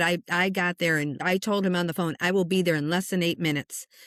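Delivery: ordinary delivery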